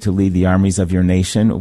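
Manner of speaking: plain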